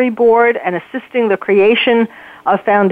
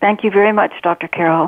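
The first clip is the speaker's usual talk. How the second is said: slightly nervous, a touch of nerves showing through; 3 semitones lower than usual. Author guest thanking the show's host as the interview begins, slightly nervous. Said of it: "I can hear a little nervousness in your voice".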